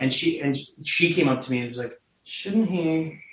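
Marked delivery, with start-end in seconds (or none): 2.2-3.2 imitated, acted-out creepy way of speaking. Recalling what the script supervisor came up and said, imitating a creepy delivery. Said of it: "even the way she said it was so creepy".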